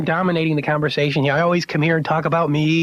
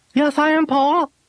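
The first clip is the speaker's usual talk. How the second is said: very high puppet dummy voice; 11 semitones higher than usual. In a ventriloquism routine, the puppet answers its handler: Tonguey ventriloquist puppet voice. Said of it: "ventriloquism routine".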